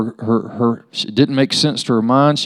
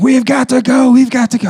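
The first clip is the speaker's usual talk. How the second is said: mock, very high-pitched, urgent screaming; 13 semitones higher, 5 dB louder than usual. Retelling being the last to jump from the plane as others screamed: retelling a scream. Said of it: "they're screaming".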